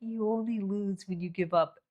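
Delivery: hushed, quiet, soft-spoken, low-key delivery. Imitating her husband's advice, saying it quietly. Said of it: "quietly, you're like".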